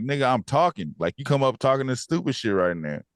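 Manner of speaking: play-acted irritated, fed-up, angry outburst. Retelling a character snapping at his partner: imitating someone angry. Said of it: "pissed at his partner".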